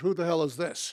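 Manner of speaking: typical New York attitude. Speaker retells his father answering a phone call, imitating Fred's New York attitude. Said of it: "in his typical New York attitude".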